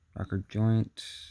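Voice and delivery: ordinary delivery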